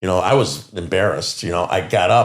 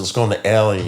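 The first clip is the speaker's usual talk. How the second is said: plain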